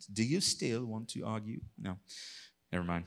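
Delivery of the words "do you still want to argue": put-on English accent. Reading the Book of Job aloud, the speaker voices God in an English accent. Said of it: "I imagine God in like an English accent".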